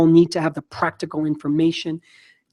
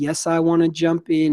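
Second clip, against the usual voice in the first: normal talking voice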